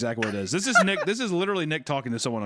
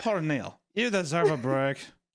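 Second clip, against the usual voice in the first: put-on doll-like accent, higher pitch; 4 semitones higher than usual. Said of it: "is that a Redditor accent?".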